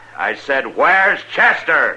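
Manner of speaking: big-voiced, high, bellowing yell. Repeating his question to a man who didn't catch it, yelling. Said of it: "Don't yell like that. Hurts my ear pans when you bellow".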